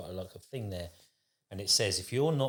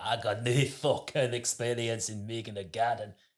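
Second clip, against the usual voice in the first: put-on broad, thick, laid-on Scottish accent. Describing an Instagram gardener and quoting him: thick put-on Scottish accent. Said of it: "Rank Scottish accent".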